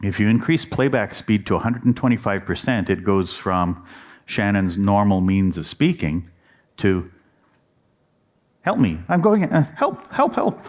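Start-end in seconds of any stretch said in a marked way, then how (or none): 8.6-10.6 frantic, panicky pleading, very high and swooping. Demonstrating how sped-up playback changes someone's speech: quick panicked cries for help. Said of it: "speaking quickly like a panicked person".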